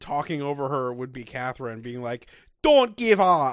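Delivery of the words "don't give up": very loud, high, put-on attempted Scottish accent. Retelling what one person said in a group conversation, in an attempted Scottish accent. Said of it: "That was my Scottish accent".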